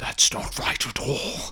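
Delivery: low, hushed, breathy whispered voice. Voicing a figure in the corner who objects: low voice. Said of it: "you hear a low".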